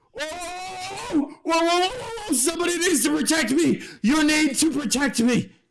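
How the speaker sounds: very high, scared, cowardly yell with long "oh". Speaker in a tabletop game voices an individual at the back; yelling out. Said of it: "who just yells at".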